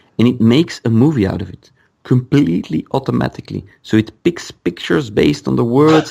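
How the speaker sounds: ordinary talk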